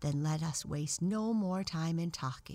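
usual speaking voice

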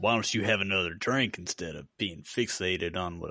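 faked backwoods country accent. Imitating a man from a story, in a put-on country accent. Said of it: "I gave him a country accent".

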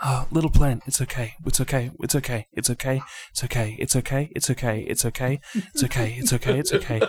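whisper talking. Voicing a character comforting a plant held as a shield: whisper talking. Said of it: "he starts to kind of whisper talk to it".

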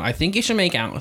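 put-on high voice, a little bit valley girl. Retelling what a drunk woman said when she came back, a bit Valley girl voice. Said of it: "a little bit Valley chick".

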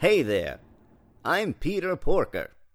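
very loud booming announcer voice. Introduce yourself as Peter Porker at the petting zoo, in a Moviefone guy voice. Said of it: "You're doing it like the movie phone guy".

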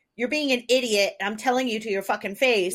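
put-on flat, blunt Philly accent. Imitating Helen Crump telling someone off: Helen Crump Philly accent. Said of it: "she said it in the Philly".

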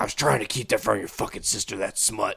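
put-on angry, mad outburst. Retelling a dad's reaction to the fixed TV: imitating an angry dad. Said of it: "he got so fucking mad at me because he's like".

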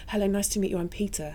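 mock soft-spoken man's voice. Speaker retells Pete coming over to introduce himself; imitating Pete's very quiet voice. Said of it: "in his very quiet voice".

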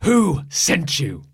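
play-acted furious, really angry, loud and high. Retelling what she said after blinking at talk of a cape; retelling a really angry line. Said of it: "her voice is like really angry".

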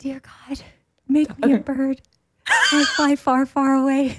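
high whisper. Asked to do one, the speaker performs it, whispering. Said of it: "Are you whispering to God or to the listeners?".

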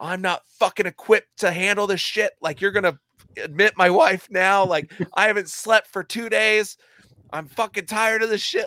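loud, high, furious, at-wit's-end screaming. Speaker re-enacts what he screamed at a nurse in triage: retelling screaming at a nurse. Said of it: "I was screaming at this nurse".

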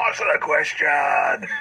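shouting. Playing a character who grabs a man by his lapels, shouting right in his face. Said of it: "and shout it right in his face".

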